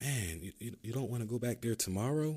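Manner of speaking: concerned, caring, worried voice. Showing how to answer a mom or close friend after a rough day, concerned voice. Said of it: "with a concerning voice".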